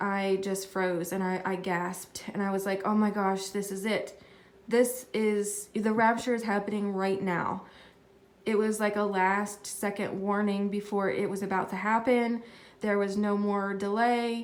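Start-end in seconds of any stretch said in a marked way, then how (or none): none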